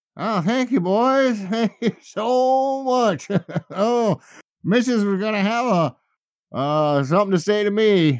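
put-on very high, sloppy drunken man voice, so stretched out. A game master voices a drunk man the players just helped: drunk man's voice. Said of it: "Dude was just drunk".

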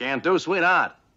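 put-on 1920s old-time gangster accent. Quoting a scene from a show, a reply in a 1920s gangster accent. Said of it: "talking with the gangster accent".

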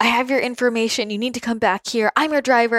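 mock rude, aggressive man. Retelling a driver calling back on the phone, imitating him mock-aggressive and rude. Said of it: "he's just being so aggressive and so rude".

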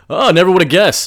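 dripping sarcasm, very high, shrill and very loud. Recapping a scene, acting out Clark's reply; retelling Clark's sarcastic line. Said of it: "Clark's being sarcastic".

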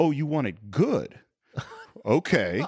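drawn-out sarcastic tone. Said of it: "[name] sarcastically goes".

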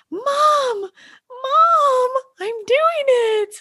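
put-on very high, gleeful, joyful child's cry, mom stretched. A mother recalls her daughter riding without training wheels: imitating a child's pure joy. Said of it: "Like the pure joy".

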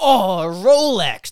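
high, slow, loud awestruck gush, gasped out.

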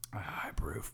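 deep voice. Giving a verdict after a first energy drink taste test: deep voice. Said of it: "That deep voice got you choked up".

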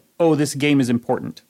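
normal talking voice

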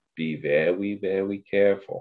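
slow, drawn-out cartoon hunter voice. Retelling what a commentator said as Shohei came to bat: sounding like Elmer Fudd. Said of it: "there more sounded like Elmer Fudd".

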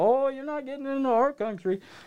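very high, put-on Canadian accent, laid on. Retelling being refused entry to the country, quoting the lady: imitating a canadian accent. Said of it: "I don't mean to use the Canadian accent".

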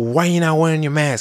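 loud demanding tone. Retelling a customer confronting the speaker about the mask: retelling a loud demand. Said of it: "like definitely way louder than that".

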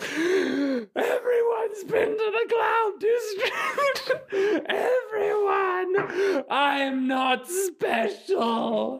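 very high shriek at top of lungs, dragged out. A man driven mad by what he sees runs out of Vecrin, screaming at the top of his lungs. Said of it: "Just screaming at the top of his lungs".

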